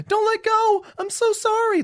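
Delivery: very high, frightened, terrified pleading voice. Retelling a comic scene where the kid flies his mom up: imitating a terrified kid. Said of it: "legitimately terrified".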